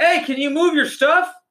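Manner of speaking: acted out, very high, far-carrying shout. Speaker retells a guy calling to them from across the park, retelling a shout. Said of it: "he's like shouting from like across the park".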